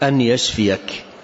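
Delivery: ordinary talk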